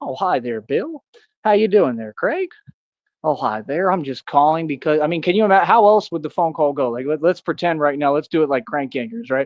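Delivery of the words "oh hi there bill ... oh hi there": swooping, overly polite yuppie voice.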